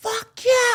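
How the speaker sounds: acted-out, very high, top-of-lungs shrieking scream. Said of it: "screaming at the top of their lungs".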